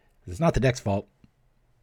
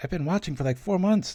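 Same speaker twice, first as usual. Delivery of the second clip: amazed, wide-eyed fan voice, much higher pitch. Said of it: "They're like".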